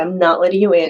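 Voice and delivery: ordinary talk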